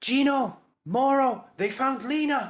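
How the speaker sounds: excited, loud yelling. Voicing a villager who spots returning adventurers at dusk: excited yelling. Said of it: "he starts yelling".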